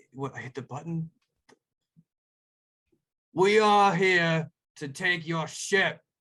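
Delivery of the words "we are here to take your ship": booming, slow, loud, drawn-out delivery. Voicing someone on an approaching boat calling over the water to the group, booming voice. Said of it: "you guys hear a voice boom over the water".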